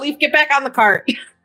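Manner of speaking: high, called-out voice. Playing a character holding the reins, yelling to Leaf. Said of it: "And I'm gonna yell".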